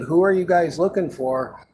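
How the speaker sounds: sweet, polite tone.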